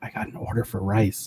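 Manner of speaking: hushed whisper under the breath. Telling a funny story about a man in a chinese restaurant, retelling his whisper. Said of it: "He was like whispering".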